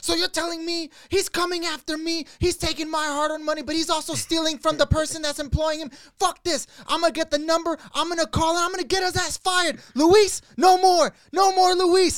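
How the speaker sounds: furious, outraged rant, very high and loud. Retelling a friend's reaction while driving in the car: imitating a furious rant. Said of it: "He was losing his shit".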